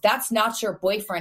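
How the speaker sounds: put-on angry voice. Retelling Dad's reply to a family member: imitating an angry dad. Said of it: "Dad gets hella mad and goes".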